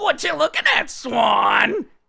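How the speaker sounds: high, loud yell with a drawn-out word. Showing the others the voice Adam Sandler does. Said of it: "What's that voice he does, Adam Sandler?".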